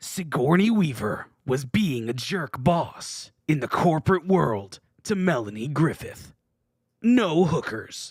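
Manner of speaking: loud, dramatic movie trailer announcer voice. Reading someone's brief description of Working Girl, in a movie trailer voice. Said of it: "read it as if it were a movie trailer".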